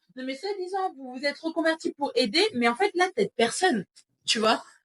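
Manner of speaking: agitated ranting.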